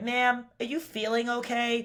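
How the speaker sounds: crappy fake American accent. Retelling what a man asked her once she managed to stand, crappy American accent. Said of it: "my crappy American accent".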